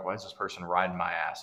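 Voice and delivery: normal talking voice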